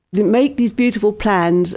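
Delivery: plain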